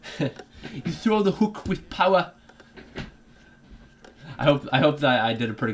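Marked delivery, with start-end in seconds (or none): 0.7-2.3 put-on Sunderland accent. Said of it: "good job with that accent".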